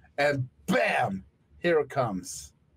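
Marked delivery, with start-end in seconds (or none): none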